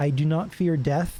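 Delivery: ordinary delivery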